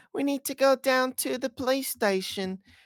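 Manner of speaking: very high, put-on English accent in a kid voice. Imitating how the speaker's nieces repeated cartoon lines: imitating nieces' english accent. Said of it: "would repeat what they would say with that accent".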